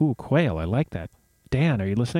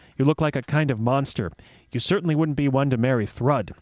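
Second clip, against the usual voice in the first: ordinary delivery, nothing marked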